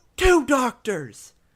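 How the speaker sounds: very high-pitched, loud crowd shout. Describing angry red squirrels in a crowd, one calls out, imitating a squirrel's shout. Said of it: "a lot of shouts".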